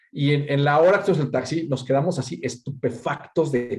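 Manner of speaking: ordinary talk, nothing marked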